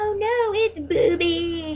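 very slow, high, drawn-out mocking tease. Retelling how the others laughed and made fun of the mix-up: imitating teasing mockery. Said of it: "they started making fun of me".

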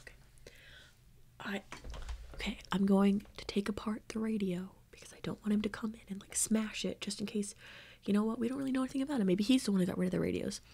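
whispered careful undertone. Not knowing if he is still listening, the speaker goes on in a lowered voice. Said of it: "I'm just going to lower my voice and be like".

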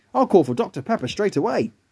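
plain

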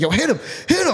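high, hyped-up, amped-up screaming yell. Retelling egging on a man squaring up to another, re-enacting his own screaming. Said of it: "I'm screaming".

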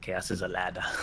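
nobleman voice, leaning hard on the "shh" of "chaos". Asked to do an impression, the speaker gives a Petyr Baelish impression. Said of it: "Do your impression of Peter Baelish".

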